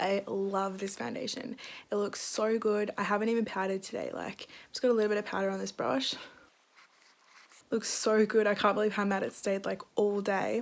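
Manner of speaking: very quiet voice. Reviewing a foundation at four in the morning, not waking people: talking really quietly. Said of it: "sorry if I'm talking really quiet".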